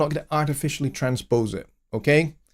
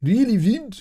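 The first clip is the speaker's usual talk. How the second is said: bad put-on Birmingham accent, pitched up; 7 semitones higher than usual. Repeating his own last word, in a bad birmingham accent. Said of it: "I don't know why I dropped into that accent".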